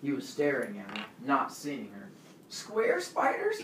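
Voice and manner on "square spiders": very high, fearful, frightened tone. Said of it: "his face was contorted in fear".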